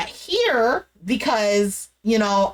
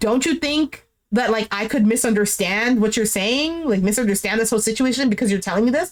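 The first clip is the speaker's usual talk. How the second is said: usual speaking voice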